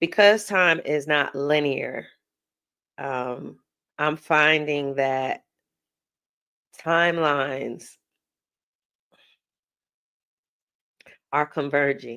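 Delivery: voice quivering slightly. Speaker channeling energy while talking to the camera, voice quivering slightly. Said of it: "I feel my voice quivering a little bit".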